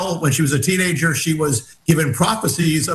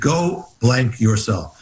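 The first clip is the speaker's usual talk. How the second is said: put-on whisper, lower; 5 semitones lower than usual. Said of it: "in a whisper".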